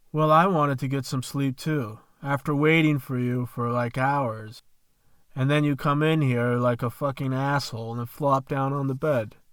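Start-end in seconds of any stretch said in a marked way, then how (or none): none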